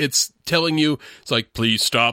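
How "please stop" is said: low, stiff robot police voice. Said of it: "that is the voice of the director voicing the robots".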